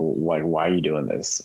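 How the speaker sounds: usual speaking voice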